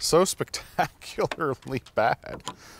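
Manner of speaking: soft, slow laugh breaking through in disbelief. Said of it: "I don't know why I'm laughing".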